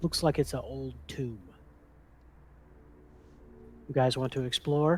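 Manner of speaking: hushed whisper. Character back at the tomb entrance, speaking to the group; whispering. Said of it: "I'm whispering".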